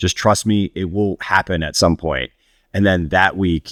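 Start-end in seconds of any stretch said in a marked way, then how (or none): none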